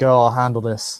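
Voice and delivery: distorted, garbled, mangled speech. A character who perceives himself as being mauled speaks up, in garbled speech. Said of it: "Kind of garbled because he currently perceives".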